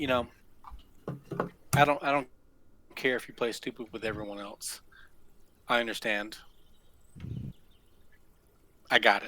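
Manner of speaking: close, leaned-in, hushed, breathy whisper. Speaking in character, leaning in close to another character: whisper. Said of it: "I whisper over to him, and I say".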